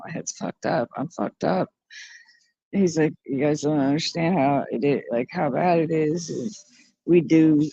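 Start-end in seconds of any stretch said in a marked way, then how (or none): 0.0-1.7 put-on crying voice, quieter. Repeating what a man always says about himself, imitating someone crying. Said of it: "he's crying and saying".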